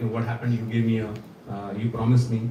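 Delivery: normal talking voice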